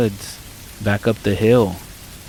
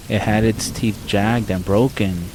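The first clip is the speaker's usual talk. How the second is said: ordinary delivery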